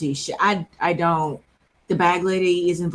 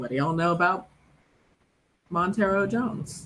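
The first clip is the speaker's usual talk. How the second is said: voice dropped down, hushed; 5 dB quieter than usual. Asking the halfling barkeepers a question in character: lowered voice. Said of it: "I'll lower my voice".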